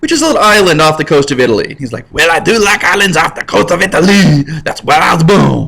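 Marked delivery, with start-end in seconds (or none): 2.1-5.7 weak, so-so put-on French accent. Speaker retells the exiled man's reply about the island: put-on French accent. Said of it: "my French accent is not as as slamming".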